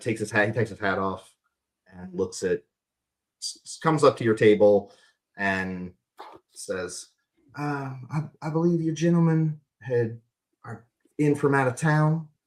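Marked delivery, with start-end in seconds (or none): 7.6-12.2 hesitant, meek, timid, slightly high voice. A man takes off his hat and comes up to your table: meek. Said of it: "kind of meekly".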